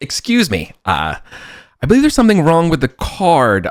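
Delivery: pompous, high, haughty, arrogant tone. Voicing a young man in robes complaining at the desk: pompous, arrogant voice. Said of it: "very pomp, arrogant".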